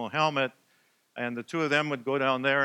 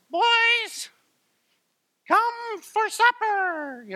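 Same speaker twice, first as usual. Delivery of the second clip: put-on small voice, much higher, louder, slower; 5 dB louder than usual. Recalling his mom calling the boys in for supper, in Ruth's little voice. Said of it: "we'd hear this little voice".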